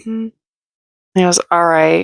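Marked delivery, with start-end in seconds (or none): 1.5-2.0 put-out, fed-up, irritated reply, acted out. Retelling his reply to her at the fire pit: imitating an annoyed reply. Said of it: "he's so annoyed".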